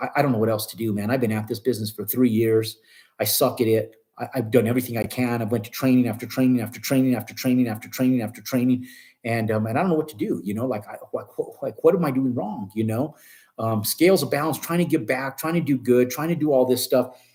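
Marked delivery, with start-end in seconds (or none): none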